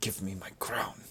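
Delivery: low, serious tone. An embarrassed character runs over to the one holding his crown, low, serious tone. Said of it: "in a low, serious tone".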